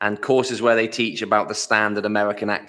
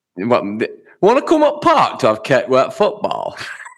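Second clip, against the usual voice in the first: put-on Yorkshire accent; 3 semitones higher, 5 dB louder than usual. Playing back one of the accents the hosts put on: put-on Yorkshire accent. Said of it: "your Yorkshire accent".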